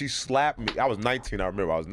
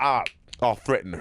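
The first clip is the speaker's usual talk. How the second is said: usual speaking voice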